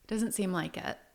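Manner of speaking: ordinary talk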